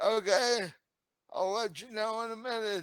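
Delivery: fast, husky woman's shouted holler. Game master voicing someone hollering back to the group; husky female voice hollering. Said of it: "this husky yet female voice hollers back".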